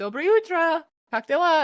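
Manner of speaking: loud, high-pitched, bright Russian speech.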